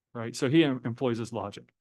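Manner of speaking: plain reading voice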